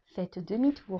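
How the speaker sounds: small, quiet satnav-style voice. Speaker describes ignoring the GPS while driving, imitating the GPS voice. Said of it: "cette petite voix".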